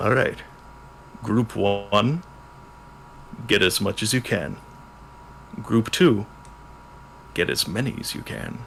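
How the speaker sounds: gruff, rough, nearly whispered, hushed voice. Game master voicing an unseen speaker ordering Group One and Group Two, gruff voice. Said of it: "You hear a gruff voice say".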